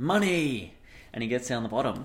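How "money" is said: one high, shouted single word. Telling a joke about a slide, acting out a character's yell: imitating someone yelling. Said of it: "he yells out".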